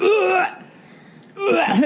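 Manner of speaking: retching, gagging sound.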